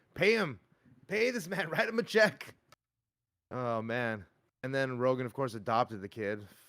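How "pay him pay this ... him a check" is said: put-on, shrill, very high-pitched demanding scream. Telling how a man screamed at someone: re-enacting someone screaming. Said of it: "he was screaming at him like".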